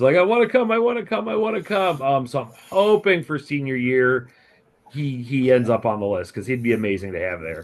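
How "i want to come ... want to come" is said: very high-pitched, begging, pleading voice. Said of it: "basically begging".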